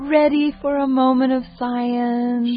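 put-on high cooing baby talk. [name] addresses Don as if he were a baby to make a point: high cooing baby talk. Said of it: "Because of the high cooing tone you used?".

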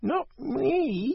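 very high cat meow, "me" stretched long. Reading a story aloud, the cat answers the question in a meowing cat voice. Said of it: "meowed the cat".

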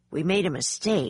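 ordinary delivery, nothing marked

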